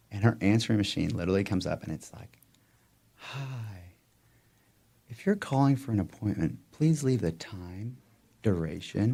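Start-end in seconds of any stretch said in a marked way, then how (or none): 3.2-9.2 sultry, seductive, inviting voice. Retelling a patient's answering machine message: imitating a sultry voice. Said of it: "her sultry voice".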